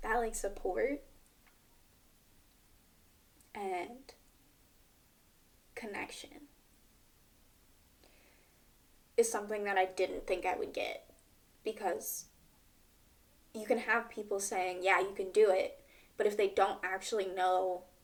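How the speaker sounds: tearful voice, crying while speaking. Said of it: "I'm crying".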